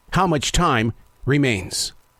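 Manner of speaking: very serious, grave, earnest, weighty tone. Speaker posing a question he wants listeners to think about: very serious tone. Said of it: "I ask that in a very serious tone".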